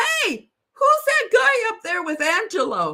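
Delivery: loud shout. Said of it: "points up and yells".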